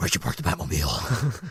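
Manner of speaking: very low, breathy exhaled voice.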